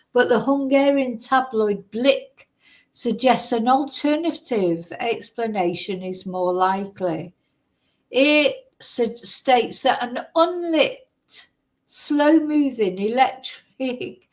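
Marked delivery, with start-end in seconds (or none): 8.1-14.2 laughing throughout while reading aloud. Reading a news report aloud and breaking into laughter. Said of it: "Sorry, I'm laughing".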